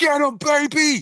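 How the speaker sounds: shrill, very high scream. Voicing Shiner cheering on an attack: screaming. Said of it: "and just screams".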